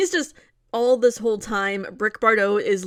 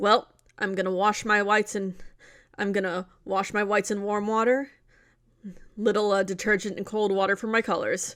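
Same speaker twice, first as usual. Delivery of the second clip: mock cop voice, flat and matter-of-fact; 5 dB quieter than usual. Describing the doll-man cop character, quoting his line in a Brick Bardot deadpan impression. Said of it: "it is completely deadpan, straight laced, like matter of fact".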